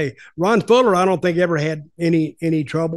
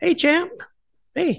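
put-on voice, much higher pitched and not rough; 11 semitones higher than usual. Describing Abdullah, whose voice does not match his body: imitating Abdullah's voice. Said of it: "he speaks like this".

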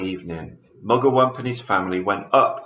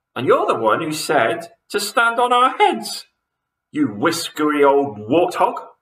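high, screeching, shrieking, full-out scream; 7 semitones higher, 3 dB louder than usual. Mrs. twit screams back at mr. twit during their argument, screaming. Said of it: "screamed Mrs. Twit".

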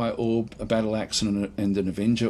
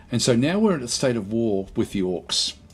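plain

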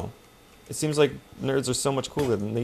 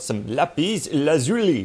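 lapis lazuli said in put-on French accent; 2 semitones higher, 3 dB louder than usual. Spotting something while exploring, in a French accent. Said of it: "I say it like a Frenchman would say it".

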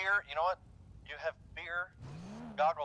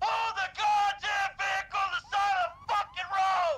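loud shouted yelling; 8 dB louder than usual. Told to step up the verbal commands, speaker is yelling through an intercom. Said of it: "Step it up on the verbal commands".

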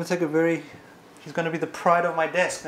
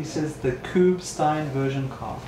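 plain

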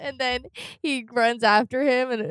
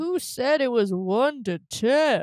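put-on voice like an anime character. Retelling a man's reaction, the speaker quotes him in a Yami voice. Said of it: "my Yami voice".

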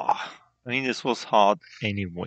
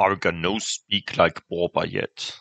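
loud, raised troll character voice; 3 semitones lower, 5 dB louder than usual. Narrating a scene at the troll lair as the second troll speaks, troll voice. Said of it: "the second troll says".

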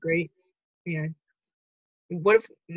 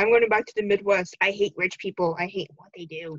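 ordinary delivery

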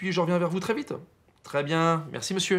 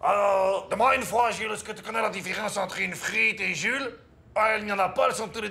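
put-on Belgian French accent; 4 semitones higher than usual. After another speaker praises their Belgian impression, joking to Jules in a Belgian accent. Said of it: "tu fais trop bien le belge".

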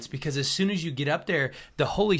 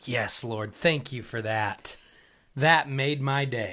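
sarcastic, put-on grateful tone, laid on thick; 4 semitones lower than usual. Acting out thanking the Lord after being challenged: put-on sarcastic thanks. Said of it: "like I just did".

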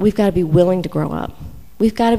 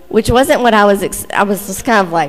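ordinary talk, nothing marked

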